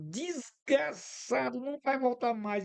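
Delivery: put-on high, drawn-out yell. Retelling shouting at a driver who drove off: retelling own yell. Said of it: "E eu gritando assim".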